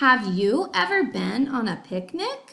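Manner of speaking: rising question-like lift at the end of picnic. Reading a sentence aloud to show it is a question: rising question intonation. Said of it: "if you heard in my voice, I was asking a question".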